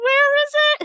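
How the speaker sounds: frantic, panicked, very high squeak. Acting out the raccoon losing his cotton candy: imitating a panicking raccoon. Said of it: "He's, like, panicking".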